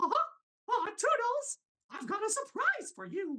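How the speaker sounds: very high pitch, words stretched out. Showing own version of the requested Mickey line: Mickey Mouse voice. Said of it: "That's mine".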